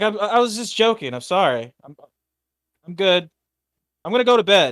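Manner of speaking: terrified, scared, stumbling, backpedaling speech. Voicing a character who flinches back after a joke: scared as hell. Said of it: "scared as hell".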